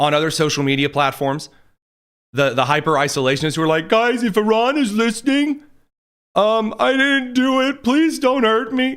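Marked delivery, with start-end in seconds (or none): 3.9-9.0 mock, cowering, high, drawn-out whimpering. Mocking online isolationists pleading with Iran: imitating a whimpering plea. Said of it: "that kind of whimpered cuck behavior".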